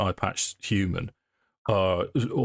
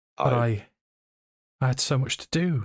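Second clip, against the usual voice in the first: tearful, on the verge of crying, much higher; 5 semitones higher than usual. Voicing a role-play character as she starts to cry. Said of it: "And she starts to cry".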